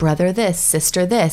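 ordinary talk

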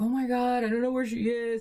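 acted-out worried voice, on the verge of crying. Retelling a worried late-night phone call: imitating father almost in tears. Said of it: "almost in tears".

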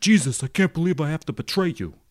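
put-on thick Brooklyn accent. Playing Judas speaking to Jesus as the film's actor did, in Harvey Keitel's full-on Brooklyn accent. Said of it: "it's just his full on Brooklyn accent".

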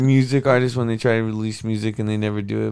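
usual speaking voice

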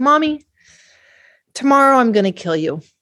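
mock composed, calm, matter-of-fact, unbothered child voice. Retelling what a child said while being rocked: imitating a child speaking calmly. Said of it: "he calmly tells me".

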